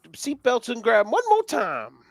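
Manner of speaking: put-on voice, very high with swooping pitch. Trying a Larry McReynolds impression after being asked for one: Larry McReynolds impression. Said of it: "Can you do a Larry Mac-, McReynolds impression".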